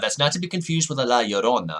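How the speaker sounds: unintentionally slipping into an Italian accent. Host describing horror-game ghosts, slipping into an unintended Italian accent. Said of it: "I don't really know why I said that with an Italian accent".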